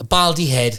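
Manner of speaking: plain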